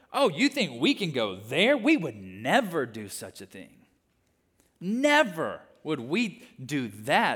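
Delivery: mock slow, loud, swooping sing-song sarcasm. Acting out a comment of very religious people, imitating a sarcastic comment. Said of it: "they're making this sarcastic comment".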